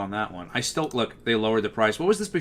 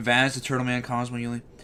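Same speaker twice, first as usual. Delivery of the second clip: usual speaking voice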